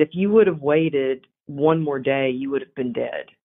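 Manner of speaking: usual speaking voice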